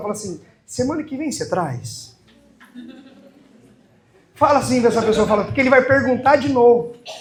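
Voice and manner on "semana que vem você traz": soft, hushed, low aside. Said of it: "fala baixinho pra ninguém escutar".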